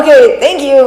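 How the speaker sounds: very loud, high, put-on slightly irritated tone. Retelling thanking a woman at Chipotle, retelling an annoyed thank-you. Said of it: "a little bit of an annoyed tone".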